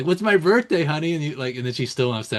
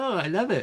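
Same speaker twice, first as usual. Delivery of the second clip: high, thrilled, delighted gushing; 7 semitones higher, 3 dB quieter than usual. Imitating someone reacting happily to a man: imitating a smiley reaction. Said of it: "he'd be all smiley".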